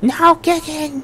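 slow, high-pitched long scream.

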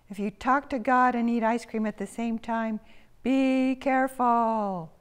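high, loud, fretful, worried cry. Two town worrywarts on their daily walk interrupt, crying out. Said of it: "cried Midge and Pidge".

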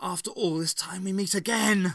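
snake-like hissed words, high and loud. The Matriarch greets the Doctor as he races into the room; hissed. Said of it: "she hissed the word".

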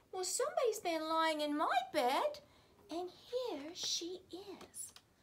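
tiny, wee little high voice. Narrating the three bears story, voicing the wee bear in a wee little voice. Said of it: "in his wee little voice".

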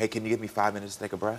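ordinary delivery

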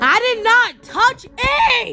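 loud, high shouting. Playing a game whose moving walls keep annoying them, screaming. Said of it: "sorry I'm screaming".

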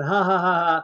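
ordinary talk

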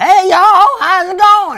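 very loud, booming, shrill, high put-on Southern accent. Mocking the partner's mom as talking Southern: loud imitation of a Southern accent. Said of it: "You're so loud".

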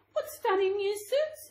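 delighted. The elves see the shoemaker's gifts for them, delighted. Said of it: "they said in delight".

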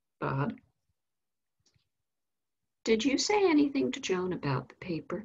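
put-on gentle, steady, calm, loving but firm tone. A mother asks her son what he said about the paper, calm, loving, but firm. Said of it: "in a very calm, loving, but firm voice".

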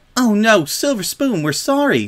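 very high-pitched, sudden, blurted. A girl apologizes to another girl who has just started crying, hastily. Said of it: "she said hastily".

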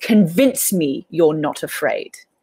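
huge, slow, booming spirit voice. Game narrator voices a roaring spirit challenging the player, big booming spirit voice. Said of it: "it's got a big booming voice".

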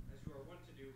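normal talking voice

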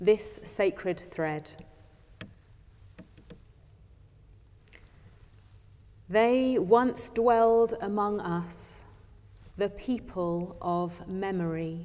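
slow, unhurried, meditative spoken reading. Reading a meditation aloud to listeners: slow meditative reading. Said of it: "I will read it slowly as a spoken meditation".

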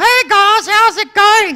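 chirpy, high-pitched, loud and cheery voice.

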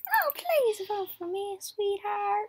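acted elderly woman voice. Playing a game, voicing a character asking for votes, wee old lassie voice. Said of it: "because I'm a wee old lassie".

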